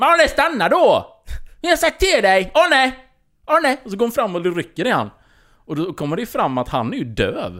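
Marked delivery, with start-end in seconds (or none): 0.0-3.8 very high, shrill, loud shouting. Retelling how a woman went after arne, imitating a woman shouting. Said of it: "Varför skriker du över hela köket?".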